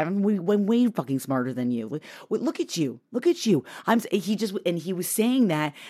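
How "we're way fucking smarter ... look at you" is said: put-on muttering under breath, lower and quieter. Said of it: "out loud, but under his breath".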